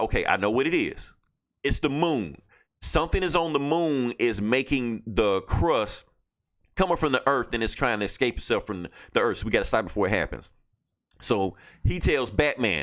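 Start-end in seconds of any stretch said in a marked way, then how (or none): none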